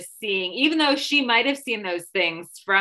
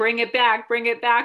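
plain

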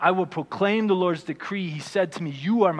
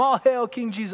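high, jeering, fully sarcastic tone; 7 semitones higher than usual. Speaker acting out how Jesus was humiliated and mocked: retelling sarcastic mockery. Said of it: "All sarcasm".

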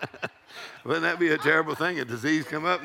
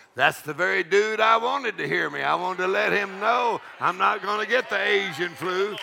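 loud voice, pitched higher; 3 semitones higher, 3 dB louder than usual. Retelling Dad Hagin's answer to the pastor: imitating a loud reply. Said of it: "Dad Hagin got real loud".

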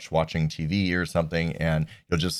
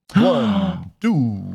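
put-on storybook vampire count accent; 3 semitones higher, 4 dB louder than usual. Counting aloud after being told you sound like the Count, do a Count voice. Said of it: "you just sound like the count".

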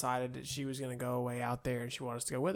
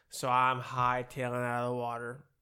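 ordinary talk

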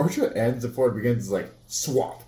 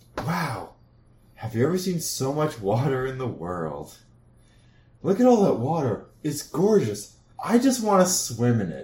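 swooping, gushing, awestruck enthusiasm; 2 semitones higher than usual. Retelling what the people behind the speaker said, imitating gushing tourist enthusiasm. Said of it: "This was enthusiasm and emotion".

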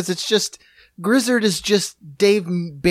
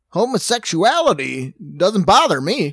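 radio announcer voice at a slower pace. Riffing on a bit with another speaker, in a Southern Paul Harvey voice. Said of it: "Like a Southern Paul Harvey".

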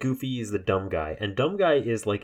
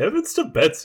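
loud, high, belted cartoonish voice; 6 semitones higher, 5 dB louder than usual. Trying Disney impressions after doing Mickey: Goofy impression slipping into Ed. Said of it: "You sounded like Edwin".

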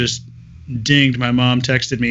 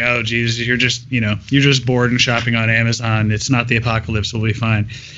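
ordinary talk, nothing marked

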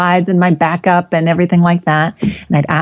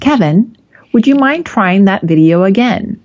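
smiling, polite tone with a smile in it; 2 semitones higher than usual. Presenter retelling how he asked the tech person onstage to retry a failed video, retelling a smiling request. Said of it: "with a smile in my voice".

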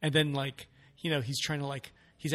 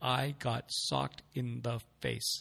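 slow, deliberate, unhurried, drawn-out delivery; 3 dB quieter than usual. Retelling his funny delivery that made everyone laugh, quoting him slowly. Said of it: "you know he said it slowly".

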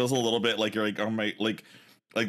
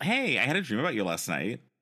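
casual, offhand, light, sing-song, breezy delivery; 3 semitones higher than usual. Trying out how to tell someone about a dream, breezy. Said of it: "let's try to do it breezy".

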